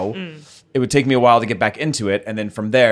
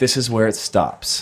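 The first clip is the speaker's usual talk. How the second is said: put-on angry tone. Retelling what was said to a guest who was leaving: imitating own angry goodbye.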